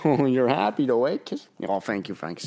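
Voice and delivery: soft, rapid, gushing chatter. Showing how people talk to their dog frankie, talking to a dog. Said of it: "when we talk to dogs, it's like".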